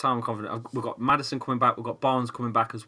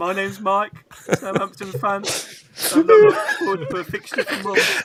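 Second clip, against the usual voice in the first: loud, sing-song, confessional-sounding delivery; 9 semitones higher, 8 dB louder than usual. Imitating a fellow fan introducing himself at a support group. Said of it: "You can see him in one of them counting centres".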